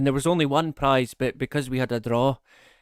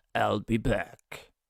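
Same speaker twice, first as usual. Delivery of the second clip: action-movie cyborg put-on voice; 3 semitones lower, 5 dB quieter than usual. Reading a famous movie quote from a quiz question: Terminator voice. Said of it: "That's my Terminator voice".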